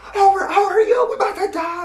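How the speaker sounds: high, loud, panicked yell. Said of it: "I'm like".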